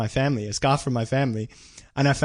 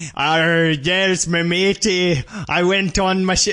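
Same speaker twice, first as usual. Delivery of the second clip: put-on pirate voice, pitched up, drifting into Scottish accent; 5 semitones higher, 4 dB louder than usual. Asked by the other speaker to hear his pirate voice: pirate voice. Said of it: "I want to hear your pirate voice".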